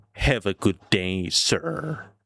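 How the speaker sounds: bad put-on droopy, mournful cartoon hound dog voice. You are not very good with impressions but try your best, a bad Droopy Dog impression. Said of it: "here's my droopy dog".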